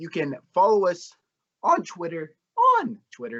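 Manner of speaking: voice cracks in the middle of a word. Closing a football podcast by plugging its twitter account, voice cracking. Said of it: "Nice voice crack there".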